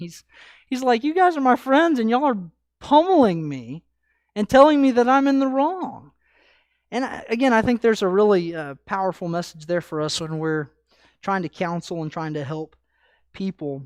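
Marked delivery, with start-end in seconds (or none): 1.0-6.1 mock fed-up, frustrated, raised, pitched-up protest. Speaker acts out Job answering his friends: acting out Job's frustration. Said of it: "You can just hear Job's frustration".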